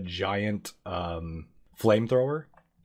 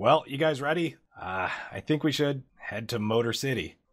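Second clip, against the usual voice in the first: loud shout called out; 4 semitones higher than usual. Voicing a character calling out from a truck: yelling out to the group. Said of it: "he yells out the".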